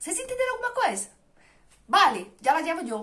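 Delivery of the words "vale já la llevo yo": casual everyday Spanish as spoken in Spain. Repeating a practised Spanish phrase, now as a fast Spanish phrase. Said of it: "tô falando rápido agora".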